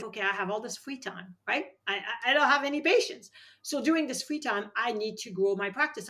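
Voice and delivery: plain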